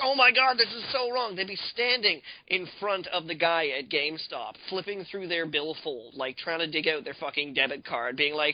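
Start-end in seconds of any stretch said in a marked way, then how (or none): 0.0-1.4 very high, shrill, loud, scandalized, outraged cry. Imitating people losing their minds over game commercials: imitating outraged gamers. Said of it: "People would be like".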